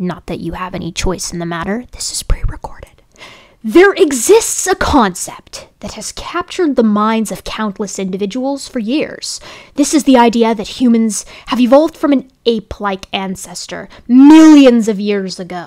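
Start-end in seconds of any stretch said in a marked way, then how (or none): 3.7-15.7 loud, exaggerated, theatrical, dramatic reading. Reading a passage aloud to the audience: dramatic reading voice. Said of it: "I'm going to read it in a dramatic voice".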